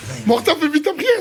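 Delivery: high, loud call across the room.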